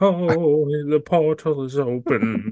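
put-on old man voice, very high, very slow, drawn out. Imitating how the actor voiced the Guardian as an old man: James Doohan old man voice. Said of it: "It's Scotty doing, like, an old man".

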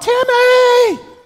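loud, high yell, carrying far. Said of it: "my mom would yell".

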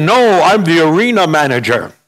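deep loud voice. Telling a story about a voice heard out on the ice, giving its reply to a man. booming voice. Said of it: "this booming voice".

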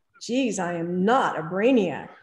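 grumbling, grousing, put-out complaining tone. Rebecca answers her companion's remark while waiting at the street: grumbling. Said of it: "Rebecca grumbled".

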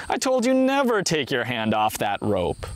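ordinary delivery, nothing marked

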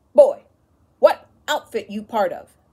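loud, gruff barking delivery. Reading a story aloud, a leader questions a captured soldier: barked. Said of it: "their leader barked".

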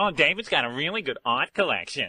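Staten Island way of talking. Describing a date's girlfriend, imitating a Staten Island type. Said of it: "sort of like one of those Staten Island types".

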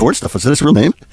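normal talking voice

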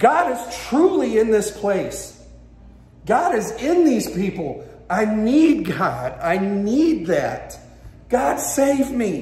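high, slow, fervent, awestruck cry.

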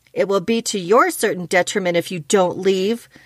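spoken through clenched, gritted teeth. Narrator reading a character's retort to a man, through clenched teeth. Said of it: "through clenched teeth".

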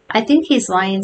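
ordinary delivery

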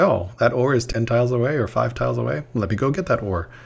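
plain

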